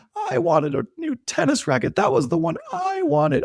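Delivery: play-acted, very high, woe-is-me sobbing whine. A parent retelling the older son's reaction to his brother's raffle win, imitating a crying whine. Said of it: "woe is me, crying, sad".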